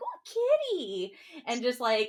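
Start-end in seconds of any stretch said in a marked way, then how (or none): 0.0-1.2 very high, put-on ditzy airhead exclamation. Acting out a character spotting a kitty, imitating a ditzy voice. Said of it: "kinda ditzy enough to be like".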